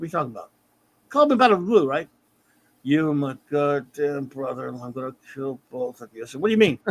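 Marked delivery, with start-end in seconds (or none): 2.8-6.3 low, flat, droning level monotone. Retelling what a caller said to him, in a monotone voice. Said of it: "he's got this like monotone voice".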